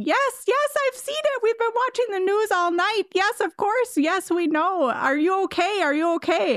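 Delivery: acted shrill, frantic, very high panicked screaming. Retelling a woman's reaction to news of an outbreak in Oklahoma, retelling a scream. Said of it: "she just starts screaming".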